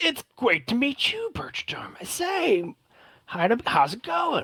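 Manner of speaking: very high, wide, overeager excited voice.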